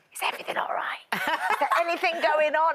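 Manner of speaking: confiding, secretive voice. Retelling asking a crying toddler adult questions: imitating a conspiratorial tone.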